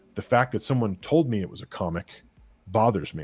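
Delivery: plain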